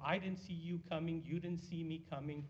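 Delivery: normal talking voice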